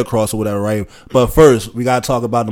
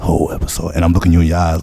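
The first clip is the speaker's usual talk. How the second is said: low, creepy-sounding delivery; 6 semitones lower than usual. Keeping up for the whole episode a voice others called creepy, creepy voice. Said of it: "I sound like a creep when I talk like this".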